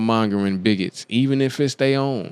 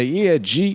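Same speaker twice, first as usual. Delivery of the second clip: high, mocking girl's voice with slang; 6 semitones higher than usual. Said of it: "the girls that say".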